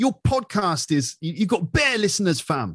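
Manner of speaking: London street-talk delivery. Explaining London slang Americans might not know, in a London street slang voice. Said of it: "people like talking like this".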